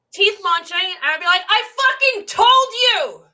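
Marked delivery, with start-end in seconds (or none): 1.4-3.1 put-on full-volume yell, higher and louder. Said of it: "At the top of my lungs".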